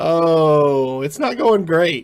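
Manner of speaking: chuckling through the words, drawn-out oh. Answering a co-host's greeting, laughing while talking. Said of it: "I'm laughing 'cause it's the only thing".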